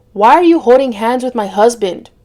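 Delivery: ordinary delivery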